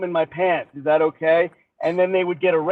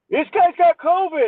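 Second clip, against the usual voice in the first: put-on very high, alarmed old man yelling; 11 semitones higher than usual. Retelling an old passenger alerting the flight attendants: imitating an old man yelling. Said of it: "he starts yelling at all the flight attendants".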